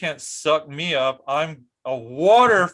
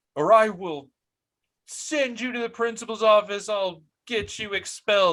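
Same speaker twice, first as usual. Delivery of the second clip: put-on high, furious screaming; 7 semitones higher than usual. Speaker retells a lady threatening to send a student to the principal, imitating her screaming. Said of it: "I like literally screaming that".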